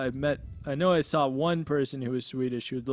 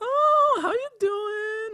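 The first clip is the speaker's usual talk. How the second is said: put-on very high, slow, drawn-out valley girl voice; 4 dB louder than usual. Describing women they saw, the speaker acts out a stereotype, Valley Girl voice. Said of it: "like Valley Girl".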